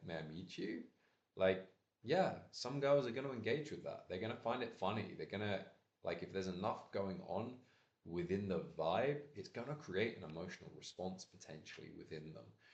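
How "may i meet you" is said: soft, playful, teasing, tongue-in-cheek, facetious tone. Demonstrating the right way to say an opener to girls, playful, a little facetious. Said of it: "a little bit kind of facetious and a little bit playful".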